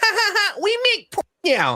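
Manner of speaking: mock high, swooping, sing-song ha-ha laughing. Imitating a YouTuber laughing about making porn: mock laughing as Queen of Kings. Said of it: "laughing about it, doing the whole".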